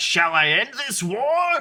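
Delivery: very high-pitched shout with rising pitch. Retelling a scene where a fighter holds his sword to the king's face, retelling a shout. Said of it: "he just shouts out like".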